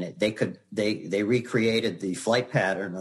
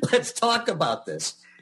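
very high, frantic, desperate shrieking pleading scream; 11 semitones higher than usual. Retelling how you screamed to get a job, retelling a scream. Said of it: "I start screaming like".

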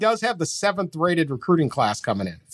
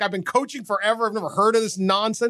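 play-acted affronted, insulted, dismissive tone; 4 semitones higher than usual. Retelling a coach's answer when asked about clapping: imitating insulted Kirk Ferentz. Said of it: "he was legitimately, like, just insulted".

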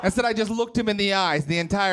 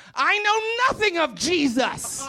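put-on slow, high, old-scripture style pronouncement; 8 semitones higher than usual. Retelling exactly how she said a line, in a biblical-sounding delivery. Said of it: "this is really how she said it".

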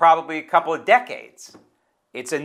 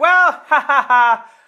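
high, loud, smug cackling laughter. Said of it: "prances out and says".

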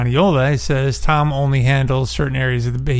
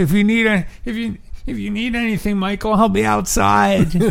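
mock desperate whining plea tone; 8 semitones higher than usual. Retelling a scene, quoting his line to Michael while imitating a desperate whine. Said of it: "it's so desperate. He says, even his tone of voice, it's almost whining".

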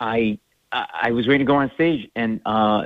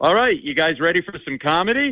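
imitated emcee announcer voice; 7 semitones higher than usual. Comedian recalls walking out of the bar after the show, imitating the mc. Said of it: "I hear the MC go".

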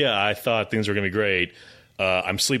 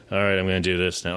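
understated, matter-of-fact, plain delivery pushing nothing; 2 semitones lower than usual. Describing an actor's delivery in a movie: imitating Alan Arkin's understated delivery. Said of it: "just Alan Arkin's delivery is just very".

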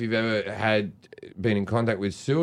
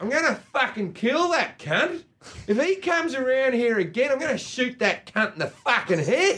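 put-on very high-pitched Australian gangster accent. Describing a movie about Australian gangsters, acting out its characters as Australian gangsters. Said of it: "it's about Australian gangsters".

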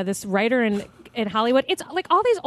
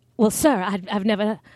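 put-on old-movie Mid-Atlantic accent; 3 semitones lower than usual. Showing an old-movie accent: put-on mid-Atlantic accent. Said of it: "that mid-Atlantic".

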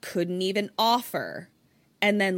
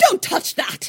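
put-on loud, raised, vague hint of a British accent; 12 semitones higher, 6 dB louder than usual. Acting out a Christmas play for listeners, the speaker voices Aunt Etta's vague British accent. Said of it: "She's got a vague British accent-ish".

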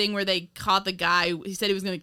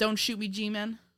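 ordinary delivery

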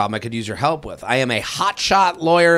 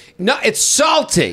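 acted-out stubborn, insistent, bickering yell, pitched up; 8 semitones higher than usual. Retelling grandparents' argument over turkey pastrami: imitating grandmother yelling. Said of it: "we just heard them yelling".

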